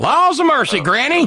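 very high, funny cartoon character voice. Recalling being very good at Snuffy Smith, the speaker does a Snuffy Smith voice. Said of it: "I was very good at Snuffy Smith".

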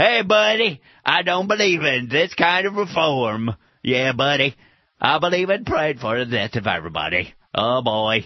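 dopey, dim, stupid-sounding voice. You are describing a real person whose voice sounds funny; imitate him in a stupid guy voice, vaguely like Brak. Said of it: "stupid guy voice".

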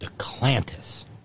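slow, whispered delivery.

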